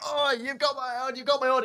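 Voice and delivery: imitated shout. Retelling a guy shouting after him on his walk home, retelling a shout. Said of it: "properly shouting".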